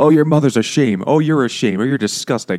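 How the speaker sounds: mock mean old woman yell, high and loud. Retelling how the grandma treats the kids: imitating grandma yelling. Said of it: "she just yells at them and is mean".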